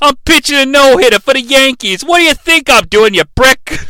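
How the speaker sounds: put-on mouthy New York street-kid sass. Recapping a scene where Santa questions Joe, the speaker voices Joe's sassy New York kid voice. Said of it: "He's a sassy New York kid".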